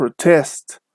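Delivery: protest with stress on second syllable, pro-TEST. Explaining stress in verbs and adjectives: stress on second syllable of protest. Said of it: "with verbs, and also for adjectives, the stress is on the second syllable. So if you hear something like protest".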